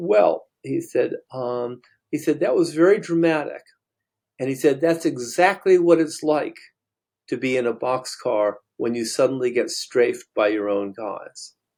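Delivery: normal talking voice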